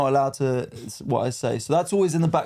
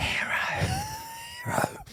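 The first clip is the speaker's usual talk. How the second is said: very high, hushed, soft whisper; 7 dB quieter than usual. Speaker describes sending comedians a voice note at three in the morning, whispering. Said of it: "I whisper it three in the morning".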